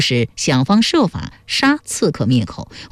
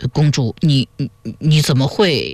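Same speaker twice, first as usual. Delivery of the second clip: very slow, broken, halting stammer. Narrator reads a man's reply to the princess after a long pause, stammering. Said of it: "结结巴巴地说".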